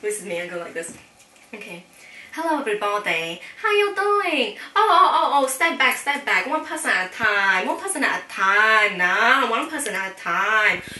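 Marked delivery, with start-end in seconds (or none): 2.4-10.8 put-on Chinese accent, loud, old woman voice. Demonstrating a Chinese accent as a store worker greeting customers, put-on Chinese accent. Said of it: "let me show you my Chinese accent demonstration".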